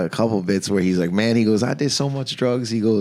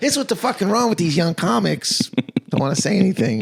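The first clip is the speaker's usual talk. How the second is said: high, yelling rant; 8 semitones higher than usual. Recounting ranting at bedtime about a young comic who didn't follow him, retelling his own yelling.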